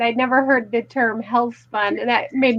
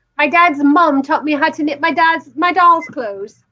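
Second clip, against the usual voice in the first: put-on British accent, pitched higher; 4 semitones higher, 4 dB louder than usual. Reading out a commenter's message after being asked for her accent: Linda's British accent. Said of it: "I wish we had her British accent saying this".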